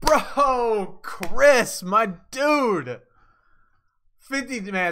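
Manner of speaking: fired-up, high, excited shouting outburst. Thanking someone for a fifty-dollar donation, yelling. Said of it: "sorry for yelling".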